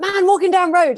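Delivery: high, loud, silly yelling voice.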